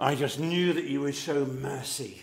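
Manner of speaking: petulant, resentful, jealous, sulky voice. Voicing the brother who sees himself as more worthy, in a mock-sulky, jealous voice. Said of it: "in a sulky, jealous voice".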